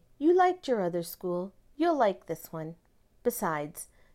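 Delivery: plain reading voice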